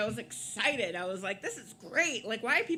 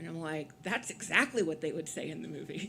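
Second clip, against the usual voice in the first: plain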